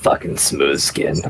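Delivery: grumbled under breath. As the other man walks away, the character grumbles under breath. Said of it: "I'll just grumble that under my breath".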